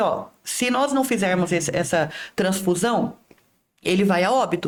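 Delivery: normal talking voice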